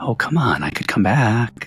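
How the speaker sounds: whispering faintly. Narrator voicing a faint, familiar voice in the listener's ear: faint whisper. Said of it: "a faint, familiar voice whispers on the air in your ear".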